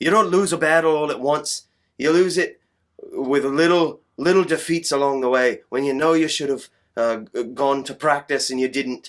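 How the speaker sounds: put-on loud, high Irish accent, press-conference delivery. Retelling a fighter's press-conference quote, the speaker does a Conor McGregor impression. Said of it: "I'm going to do my best Conor McGregor impression here".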